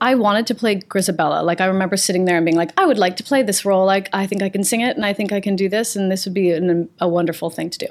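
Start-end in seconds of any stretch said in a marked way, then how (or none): none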